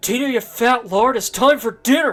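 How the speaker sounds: loud yelling call, hollered out. Quoting a movie scene of calling the llama to dinner: Napoleon Dynamite yelling at Tina. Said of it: "Tina, the llama".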